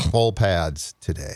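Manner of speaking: slow, word-by-word delivery with low emphasis. Repeating an announcement to the others a second time, said slowly. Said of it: "I'll say it slowly".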